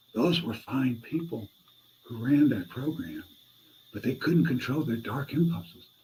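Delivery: totally different, hushed whispered voice. Retelling a father's words in a confrontation: imitating a father's whisper. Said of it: "began to whisper in a totally different voice".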